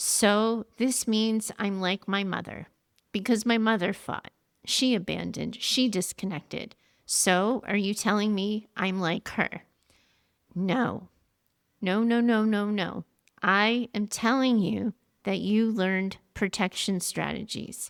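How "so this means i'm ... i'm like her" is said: plain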